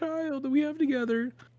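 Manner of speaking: very high, sad, pleading voice. Narrating the group's game scene, voicing the poor, sad wife who loves her husband. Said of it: "poor, sad wife who loves her husband".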